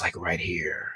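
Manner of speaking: very soft, whispered meditation voice.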